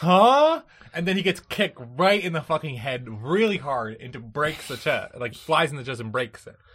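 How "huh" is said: high, loud, confused huh. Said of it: "And Goku's like".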